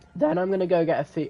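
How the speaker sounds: voice breaking mid-word. Speaker explaining what they'll go get next, voice cracks. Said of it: "voice crack alert".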